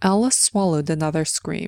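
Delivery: ordinary delivery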